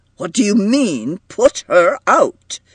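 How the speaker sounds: insistent pressing tone. Someone reacts to being told nobody will put her out, demanding.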